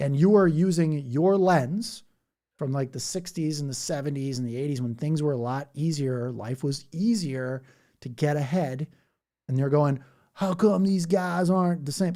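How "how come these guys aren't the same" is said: put-on Southern American accent with a drawl. Imitating an older unhappy person complaining about younger people: put-on Southern accent. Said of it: "Sorry if I do the Southern accent".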